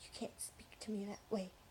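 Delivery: acted-out muttering. Retelling what a woman muttered under her breath, not even to the speaker, retelling a mutter under the breath. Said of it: "she muttered under her breath".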